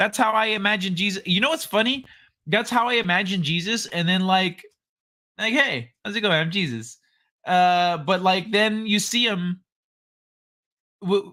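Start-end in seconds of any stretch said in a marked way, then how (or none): 5.5-7.0 relaxed, easygoing, casual laid-back dude voice. Imagining how Jesus greets people: casual laid-back Jesus voice. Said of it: "he just shows up like a casual dude".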